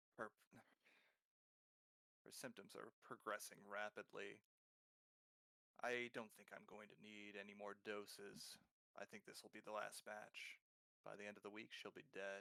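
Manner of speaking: barely audible, very soft, hushed half-whisper. Narrator voicing an overheard man, in a hushed half-whisper. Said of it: "you hear him speaking in a hushed whisper".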